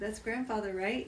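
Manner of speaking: plain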